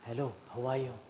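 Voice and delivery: very quiet, low, hushed secretive voice. Showing how a speaker should deliver a secret: lowered, quiet voice. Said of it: "show it like this. ... Lower your voice".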